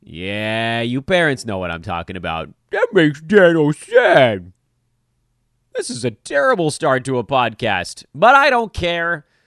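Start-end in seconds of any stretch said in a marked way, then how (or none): 2.7-4.6 high, loud reindeer voice, stretched and sad. Opening a podcast, the host does Kristoff doing Sven voice. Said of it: "I sounded a little bit like Kristoff doing the voice of Sven the reindeer".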